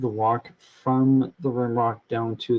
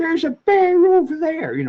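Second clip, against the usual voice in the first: mock American accent, much higher; 5 dB louder than usual. Retelling what an American driver said about a bear: imitating an American accent. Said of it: "kind of that kind of accent".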